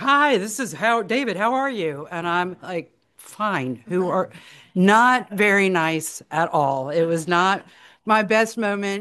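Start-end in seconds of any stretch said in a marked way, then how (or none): 0.0-2.1 put-on large, full, big voice. Retelling a phone call from an unknown number, booming voice imitating David. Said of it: "this booming voice is like".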